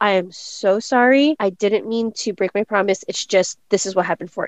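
ordinary talk, nothing marked

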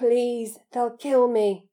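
rough, hoarse, croaking voice. Reading a story, Harry pleads with Dobby, croaking. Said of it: "croaked Harry".

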